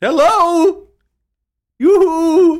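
calling out loudly. Calling after Jameson, who just went through the door: loud calling out. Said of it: "Do you have to do that so loudly?".

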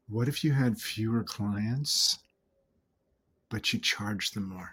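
low, quiet, sultry voice. Speaker repeats the earlier question, now in a bedroom voice. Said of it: "My bedroom voice".

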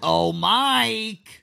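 stretched-out word, shrill and rough voice. Doing an impression of the worm monster in Monsters, Inc. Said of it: "Is that a good impression?".

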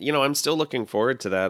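ordinary talk

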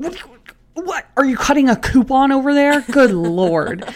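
play-acted exasperated, annoyed outburst, very loud and high. Retelling own reaction to someone cutting a pizza box: imitating own annoyed voice. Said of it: "I'm getting even more annoyed".

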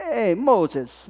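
put-on Italian accent. Speaker voicing an Italian figure greeting Moses, put-on Italian accent. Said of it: "I don't know why I use that accent".

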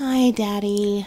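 sleepy, drowsy whisper. A girl stirring in bed greets her father in a sleepy whisper. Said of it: "she whispered in a sleepy voice".

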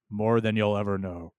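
deep, weighty, grave, solemn voice with gravitas. Retelling a character's reply in a Babylon 5 scene, imitating his gravitas voice. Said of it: "he says in his incredible gravitas voice".

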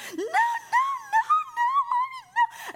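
very high, loud, slow, drawn-out tearful crying. Recounting giving her daughter milk, the mother quotes the reaction: imitating a daughter starting to cry. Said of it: "she just starts crying".

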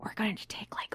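soft, hushed whisper. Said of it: "we should probably whisper".

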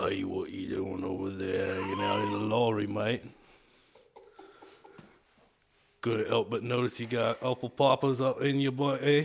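menacing, intimidating British tough-guy voice. Taking a voice challenge, performing the intimidating British guy character. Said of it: "the intimidating British guy".

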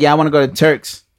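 put-on ordinary basic-person voice. Mocking the expected answer about where to travel: mock basic-person voice. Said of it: "be a regular bitch and be like".

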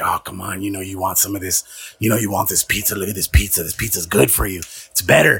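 low, secretive whisper under the breath. Speaker retelling what they said to a girl, re-enacting their own whisper. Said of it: "I'm just like whispering".

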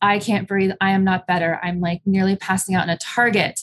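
plain

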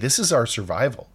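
ordinary delivery

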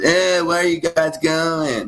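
put-on strange-sounding northeastern Boston accent. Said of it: "he's got that weird Boston, Connecticut accent".

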